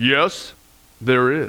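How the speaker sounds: calm, deep, powerful voice. Telling a joke, voicing the answer from the sky: calm, powerful voice. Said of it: "this calm, powerful voice came out of the sky".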